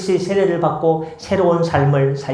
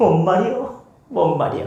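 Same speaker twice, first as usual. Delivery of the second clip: put-on Chungcheong regional accent; 3 semitones higher than usual. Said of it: "충청도 사투리로 이렇게 합니다".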